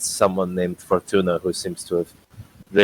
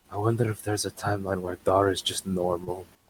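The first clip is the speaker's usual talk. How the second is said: muttered, much quieter; 10 dB quieter than usual. In a role-play scene, a character speaks an aside: muttering under breath. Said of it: "Under his breath".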